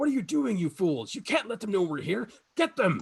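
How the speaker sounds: very high yell in character voice. Voicing a woman who yells at her allies to attack: yelling in character. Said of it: "she yells at them".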